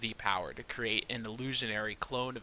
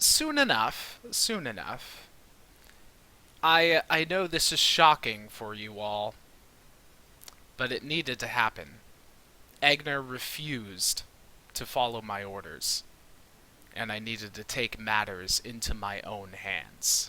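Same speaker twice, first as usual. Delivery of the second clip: oddly altered, processed-sounding, modulated voice. Someone speaking as Aigner explains taking over after being asked why they sound strange, strange modulated voice. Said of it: "Do you have voice modulation?".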